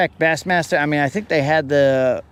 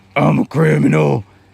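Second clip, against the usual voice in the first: put-on aggressive character voice; 5 dB louder than usual. Comparing two Batman voices, first the aggressive one: Unlimited Batman voice. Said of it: "Unlimited sounds like this".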